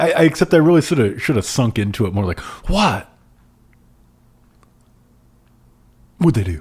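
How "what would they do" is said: swooping delivery with dramatic pregnant pause. Redoing a line to sink into it more, the speaker delivers it with a pregnant pause. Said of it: "good pregnant pause".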